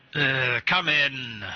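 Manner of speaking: muffled as through a door. A game master voices a character answering a knock from inside: muffled voice. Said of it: "a somewhat muffled voice from inside".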